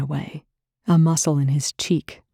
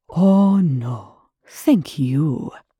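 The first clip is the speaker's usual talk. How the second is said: very slow, drawn-out, sarcastically overpolite tone; 3 dB louder than usual. A man answers another man's sarcastic thank-you, with mock courtesy. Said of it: "with a discourteous level of courtesy".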